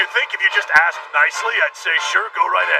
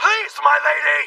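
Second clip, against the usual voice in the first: yelling, much higher pitch and slower pace; 10 semitones higher than usual. A character calls out for the girl they have been waiting for: yelling. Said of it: "You don't have to yell at me".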